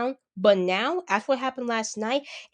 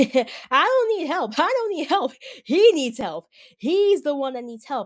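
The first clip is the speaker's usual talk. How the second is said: put-on maniacal laughing voice; 3 semitones higher, 4 dB louder than usual. Retelling how a wrestler laughed: laughing like the Joker from The Dark Knight. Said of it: "He was laughing like the Joker from The Dark Knight".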